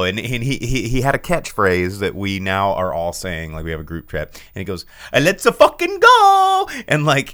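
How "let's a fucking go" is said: put-on Italian accent, much higher, louder. Quoting his catchphrase that everyone now says, in a Mario-like Italian accent. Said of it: "he legitimately talked like Mario".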